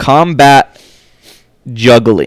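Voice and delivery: slow, deliberate, weighty delivery. Speaker naming the first one slowly so the others really hear: slow and deliberate. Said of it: "I'm gonna say it slowly so that way you guys actually hear me".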